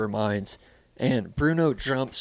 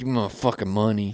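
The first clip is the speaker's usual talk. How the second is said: mock dead-serious, stern put-on voice. Retelling a friend's demand made in a sombrero and ski mask: imitating Bruno, dead serious. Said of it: "he would be dead serious".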